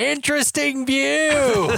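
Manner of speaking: very high shout with "view" drawn out. Retelling a character speaking into a hidden tape recorder: retelling a shout. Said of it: "shouts into the tape recorder".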